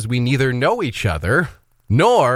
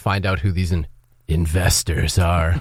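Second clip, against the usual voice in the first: put-on sinister, nefarious tone, lower pitch; 6 semitones lower than usual. Suggesting a reply about finding out who the investors are: mock nefarious tone. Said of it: "say it with a nefarious tone of voice".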